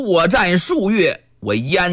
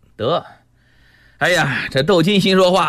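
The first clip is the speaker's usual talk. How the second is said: plain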